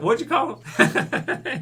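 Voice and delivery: terrible put-on cartoon cowboy accent, high and slow.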